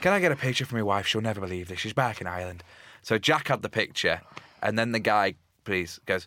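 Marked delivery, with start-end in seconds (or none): 0.0-2.6 put-on Irish accent. Retelling the Irish fan asking for a picture: put-on Irish accent.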